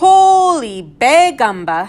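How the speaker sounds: high, loud, squawky shout, holy drawn out. Narrator voicing a character who stops laughing to shout, in Dolores the parakeet voice. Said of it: "in the voice of Dolores the parakeet".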